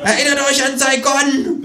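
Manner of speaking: high-pitched, screamed, menacing delivery.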